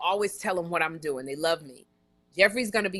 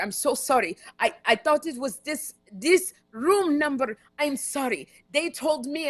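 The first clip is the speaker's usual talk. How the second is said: put-on high, apologetic French accent; 7 semitones higher than usual. Retelling a drunk man apologizing at your door, speak in a French accent. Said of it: "the man still was talking on a French accent".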